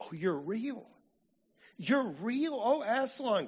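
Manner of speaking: very high joyful exclamation. Lucy to aslan, after he licks her forehead, crying out. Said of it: "cried Lucy".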